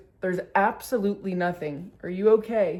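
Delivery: plain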